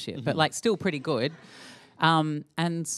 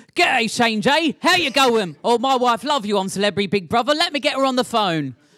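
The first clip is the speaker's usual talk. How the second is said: convincing, chatty, higher-pitched taxi driver voice; 7 semitones higher, 9 dB louder than usual. Speaker tells an interviewer how taxi drivers now greet him, imitating a taxi driver. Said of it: "that was scarily convincing".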